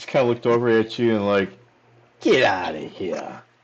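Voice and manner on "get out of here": put-on slow, low-pitched New Jersey accent. Narrating a game, the speaker voices the bartender answering a player, in a New Jersey accent. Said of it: "like in a New Jersey accent".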